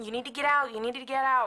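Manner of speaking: loud, insistent yelling, repeated over and over. Retelling banging on a bathroom door: retelling a yell. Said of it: "and I was yelling".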